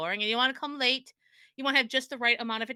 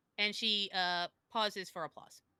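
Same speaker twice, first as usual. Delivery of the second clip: ordinary talk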